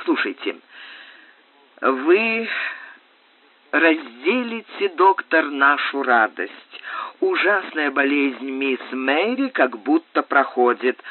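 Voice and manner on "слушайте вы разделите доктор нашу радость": plain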